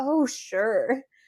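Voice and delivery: put-on, dry, joking sarcasm. Retelling a proposal she thought was a joke, retelling a sarcastic reply. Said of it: "being my sarcastic self".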